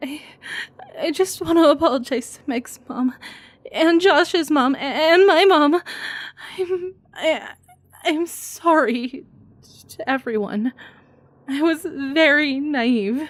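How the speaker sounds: acted crying. Showing how to sound like you're crying in a tearful monologue: acted crying. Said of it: "let me perform a small monologue from the Blair Witch Project".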